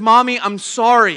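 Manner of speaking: put-on tearful voice, on the edge of tears. Retelling a small child's apology, tears starting: imitating Hannah near tears. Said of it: "the tears are already starting to come".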